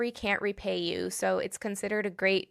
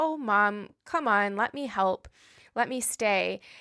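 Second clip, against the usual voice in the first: mock-compassionate, gentle, pleading voice. Retelling how a daughter pleads with her upset mom to stay; imitating a compassionate plea. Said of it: "Brenda is still being compassionate to her".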